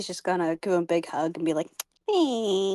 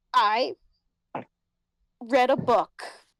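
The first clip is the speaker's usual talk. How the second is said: mock stiffened-up, awkward, very slow delivery; 2 semitones higher than usual. Voicing a character who stiffens up when her dad asks questions: stiff, awkward reply. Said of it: "stiffen up and be like".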